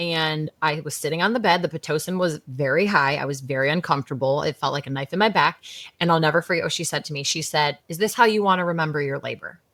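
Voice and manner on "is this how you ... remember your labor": put-on sassy, attitude-filled tone. Retelling what a nurse said during labor: imitating a nurse's attitude. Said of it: "such attitude".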